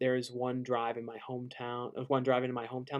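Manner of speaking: ordinary talk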